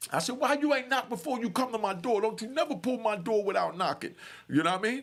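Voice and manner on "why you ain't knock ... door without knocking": high-pitched screaming, angry and scolding. Retelling how he yelled at a guard at his door: retelling his own scream. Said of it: "I screams on him".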